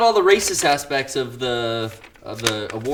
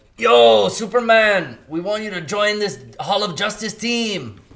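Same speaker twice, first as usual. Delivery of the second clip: put-on higher-pitched, stoned buddy character voice; 7 semitones higher than usual. Imagining a post-credits scene line, in a Cheech Marin impression. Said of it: "that's my Cheech Marin impression".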